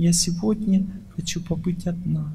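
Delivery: soft, calm, low-key, emotions held back. Advice on speaking to a man with few emotions: calm, low-emotion. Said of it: "спокойненько".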